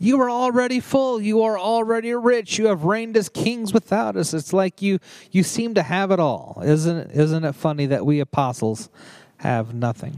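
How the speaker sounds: mock, laid-on strong sarcasm, swooping high voice. Paraphrasing the apostle's letter to the Corinthians: imitating Paul's sarcasm.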